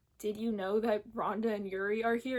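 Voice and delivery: ordinary talk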